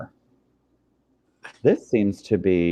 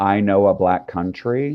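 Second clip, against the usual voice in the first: usual speaking voice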